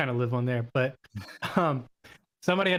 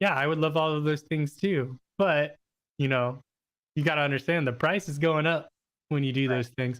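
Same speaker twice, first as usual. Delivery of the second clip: put-on dry, sarcastic, knowing tone. Retelling a comment from a Facebook group: imitating a sarcastic comment. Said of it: "a sarcastic comment".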